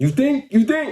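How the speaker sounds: high, rising, teasing and suggestive tone.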